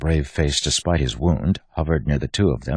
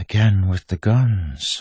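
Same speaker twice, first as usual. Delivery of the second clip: gentle, pitched-up reproach, lingering on guns; 5 semitones higher than usual. Bleeder speaks to Wax, who is holding a gun on Bleeder; said softly. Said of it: "Bleeder said softly".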